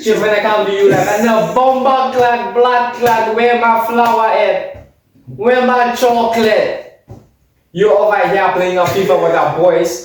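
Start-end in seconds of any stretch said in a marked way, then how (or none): 1.2-10.0 put-on Jamaican patois accent, girlfriend voice. Acting out what a girlfriend would say to him, Jamaican accent. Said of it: "Why is the Jamaican accent come up?".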